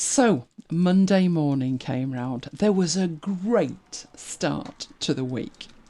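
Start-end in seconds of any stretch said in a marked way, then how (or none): 2.5-5.7 dry, deadpan, ironic, sarcastic. Describing Monday morning after a good Sunday night, sarcastic. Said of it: "Can you note the sarcasm in my voice?".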